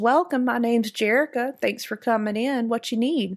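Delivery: country-style speaking voice. Showing how she would greet the player as a game character, country voice. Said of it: "talk like my country self".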